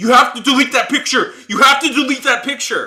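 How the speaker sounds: shrill, very high, very loud scream. Retelling a man who screamed at them for taking a car picture: retelling a scream. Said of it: "he starts screaming at me".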